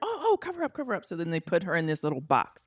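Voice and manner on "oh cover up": mock scream, much higher and slower. Retelling what a woman's people screamed at her, mimicking people screaming. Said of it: "her people are like screaming".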